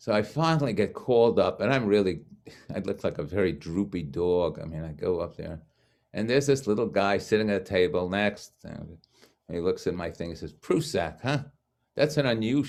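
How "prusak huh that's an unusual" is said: put-on thickest possible New York accent, pitched up. Quoting a little guy at a table reading the speaker's name, thick new york accent. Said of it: "in the most New York accent I had ever heard".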